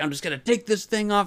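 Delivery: high, furious, angry yelling outburst. Retelling a princess character's outburst: imitating an angry scream. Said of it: "screaming, and she's angry".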